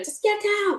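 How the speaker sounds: acted piercing, high-pitched scream. Retelling protecting someone as people trampled over them, retelling their own scream. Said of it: "because I'm screaming at her".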